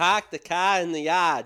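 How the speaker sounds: loud Boston accent. Asked to try the practice sentence, speaker demonstrates a boston accent. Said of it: "in a Boston accent".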